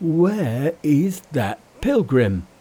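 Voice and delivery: gasping out the words. Narrating a story, Pigsy speaks right after hearing those words, gasped. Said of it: "he gasped".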